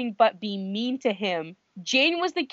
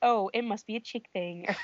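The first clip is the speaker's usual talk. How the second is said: put-on self-deprecating tone, quieter; 6 dB quieter than usual. Retelling a TV scene, quoting Jane's reply: imitating Jane, self-deprecating. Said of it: "she says it in the most self-deprecating way".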